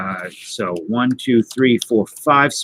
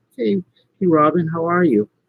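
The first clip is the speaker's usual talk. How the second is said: put-on high, sing-song voice used for little kids; 7 semitones higher than usual. Repeating own greeting to a viewer: imitating own talking-to-a-child voice. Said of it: "said it like you were a child".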